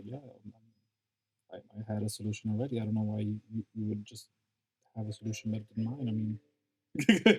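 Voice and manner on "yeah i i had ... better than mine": hushed, under-the-breath muttered stage whisper. Voicing a character as the players leave: half-whispering to himself. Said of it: "he's sort of whispering him to, to himself".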